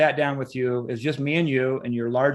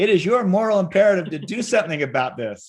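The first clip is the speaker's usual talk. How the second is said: put-on Southern twang, raised and high-pitched; 6 semitones higher, 5 dB louder than usual. Reminding the guest what they said at a first meeting, imitating a southern twang. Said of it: "in your Southern twang".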